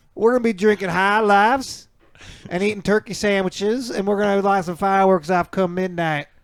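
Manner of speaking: put-on, loud, high-pitched Southern accent. Performing a line after being asked to show a Southern accent: Southern accent. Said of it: "Is that good?".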